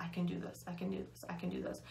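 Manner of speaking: soft, repeated whisper under the breath. Recalling pacing the house holding the walls, retelling a whisper to oneself. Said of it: "I was like whispering to myself".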